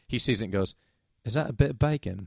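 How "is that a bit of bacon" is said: put-on attempted British child accent. Retelling what a kid said on seeing a Band-Aid: attempted British accent. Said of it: "I'm gonna attempt the accent".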